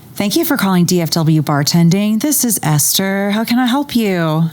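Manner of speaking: polished, pleasant customer-service phone voice. Answering a pretend call for a bartending business, polished phone-answering voice. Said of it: "I have a great phone voice".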